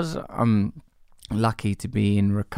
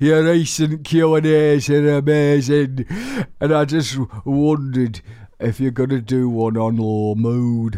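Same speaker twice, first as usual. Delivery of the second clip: loud, raised, bright put-on Yorkshire accent; 5 semitones higher, 6 dB louder than usual. Reading out a message addressed to the host: put-on York accent. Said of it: "this is how people from York talk".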